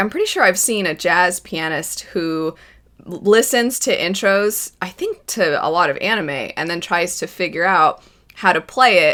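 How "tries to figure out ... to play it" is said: ordinary talk, nothing marked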